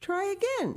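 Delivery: very high, coaxing, supportive, encouraging call. A girl urges another girl who is trying to walk; encouraging. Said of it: "said Heidi encouragingly".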